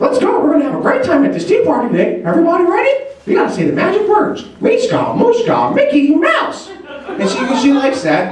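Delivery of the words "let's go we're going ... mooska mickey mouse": squeaky voice, bouncing up and down. A parent at a tea party with their daughter, making it fun in a Mickey Mouse voice. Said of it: "I'll do Mickey Mouse's voice".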